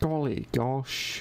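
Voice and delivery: put-on Welsh accent, attempted and off target. Asked to try accents, one speaker has a go at a welsh accent. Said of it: "That's my Welsh accent".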